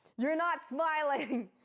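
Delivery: mock, very high, shrill, insistent shout. Retelling someone ordering a smile for a photo: imitating someone yelling. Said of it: "And just yelling".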